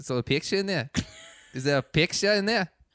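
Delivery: put-on New Zealand accent, slightly South African. Recounting sitting with Jordan: imitating Jordan's New Zealand accent. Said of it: "It was a little South African".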